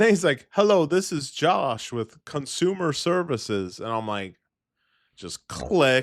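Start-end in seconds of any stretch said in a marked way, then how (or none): 0.5-3.8 put-on Indian accent. Retelling a scam phone call taken while driving for work, imitating Josh's Indian accent. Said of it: "he had an Indian accent".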